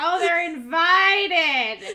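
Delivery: put-on goblin voice, shrill, very loud. Narrating goblins popping up one after another about the guests; goblin voice. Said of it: "somebody else like pops his head up from underneath a rug".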